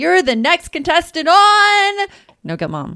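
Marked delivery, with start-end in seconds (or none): 0.0-2.1 high, loud game-show announcer voice, "on" stretched out. Introducing the co-host as a contestant: The Price is Right announcer voice. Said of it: "like to think of The Price is Right".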